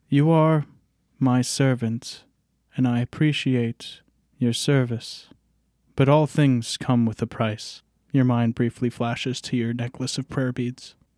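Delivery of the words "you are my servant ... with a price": understated, intimate, restrained delivery. Narrating a dream where a shining lady addresses Cedric, speaking quietly. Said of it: "she quietly speaks to Cedric".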